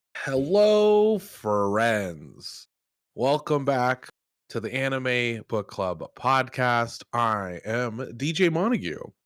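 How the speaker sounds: very slow, drawn-out delivery, every word dragged. Opening the podcast episode, imitating Greg Big Dumb Deezus, slow. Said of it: "going as slow as I can".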